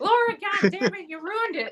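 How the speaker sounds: very high-pitched put-on southern accent. Retelling mom scolding over a painting: imitating mom's southern accent. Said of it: "She had a southern accent".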